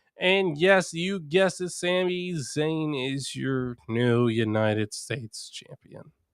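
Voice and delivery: thoroughly disappointed tone, one word drawn out. Announcing the new champion after recapping the match: disappointed. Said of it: "why I sound disappointed".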